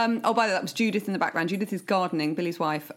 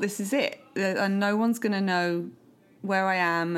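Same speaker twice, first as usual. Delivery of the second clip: ordinary delivery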